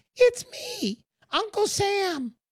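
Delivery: very high, tiny little voice.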